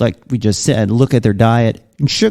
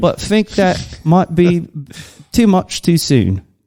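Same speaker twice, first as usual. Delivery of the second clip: fake British accent, higher; 6 semitones higher than usual. Reading out a listener's message from a British writer: put-on British accent. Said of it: "rate my British accent".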